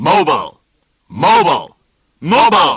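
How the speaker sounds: loud yell from several voices together.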